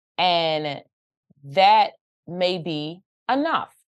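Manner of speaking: measured, unhurried, slow and deliberate delivery. Responding in a conversation about wanting to just do hair, slow and deliberate. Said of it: "I say it slow like that".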